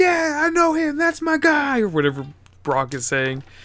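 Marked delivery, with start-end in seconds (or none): 0.0-1.8 put-on, very high, excited, eager shout of approval. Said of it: "And he's all excited".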